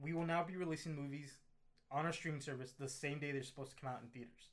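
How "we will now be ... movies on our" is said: ordinary delivery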